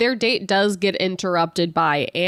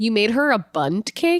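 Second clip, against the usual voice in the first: normal talking voice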